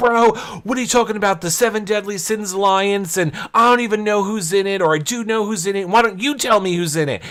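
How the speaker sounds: put-on all-out high-pitched screaming tirade. Retelling an argument, imitating a man screaming. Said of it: "he's just screaming, screaming like".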